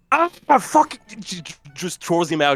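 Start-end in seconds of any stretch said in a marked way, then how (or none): 0.1-0.9 startled cry in a character voice. Voicing Clelia startled as the cleaner passes her face: Clelia snapping, startled. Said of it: "Clelia snaps out and she's like".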